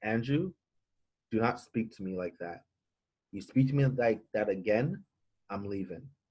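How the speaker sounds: soft, calm, quiet, soft-spoken delivery. Man recounts a woman's reply after he shouted at her, retelling her soft reply. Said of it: "in a soft voice".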